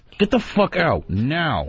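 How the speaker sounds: very angry, high, furious, spoken through clenched teeth. Ordering another man to leave during a home invasion, very angry through clenched teeth. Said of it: "a very angry [name]".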